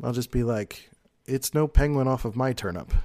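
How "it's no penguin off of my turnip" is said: usual speaking voice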